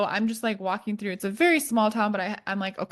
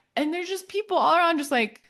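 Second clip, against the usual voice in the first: ordinary talk, nothing marked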